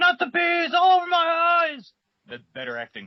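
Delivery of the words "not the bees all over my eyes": very high, drawn-out shrieking scream. Comparing with a film scene: imitating Nicolas Cage screaming. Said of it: "Nicolas Cage going".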